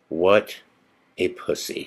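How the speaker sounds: grave, dead-serious, deadpan hushed whisper. Retelling what a woman at a ghost event said to her: imitating her most serious voice. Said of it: "in the most serious voice".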